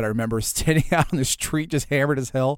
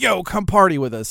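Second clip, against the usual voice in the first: mock big, loud, high call; 6 semitones higher, 4 dB louder than usual. Retelling inviting strangers on the street: imitating a loud American. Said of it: "the two big, loud Americans just kept snatching Europeans".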